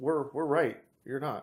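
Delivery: ordinary talk, nothing marked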